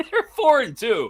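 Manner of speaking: giggly, very high, words breaking into laughter. Announcing the Steelers' record after another improbable win, laughing while talking. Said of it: "I can't say it without laughing".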